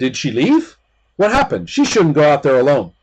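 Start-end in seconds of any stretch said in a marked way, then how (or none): 0.0-1.7 startled, caught off guard, sudden alarm. Voicing a character who notices a guest is gone: startled. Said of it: "Iru's startled and said".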